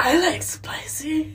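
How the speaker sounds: raspy, flirtatious tone. Retelling the pickup line a guy used, in a raspy voice imitating Andrew. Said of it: "I did not like rasp".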